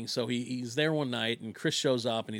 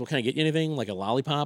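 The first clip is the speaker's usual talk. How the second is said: ordinary talk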